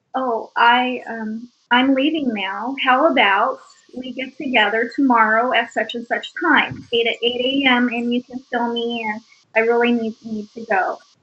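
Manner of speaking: plain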